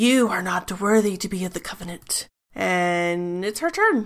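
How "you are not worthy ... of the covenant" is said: venomous, hissing hag voice. Narrating a tabletop fight, voicing a hag answering a player; hissing hag voice. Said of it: "She hisses at your radiant and says".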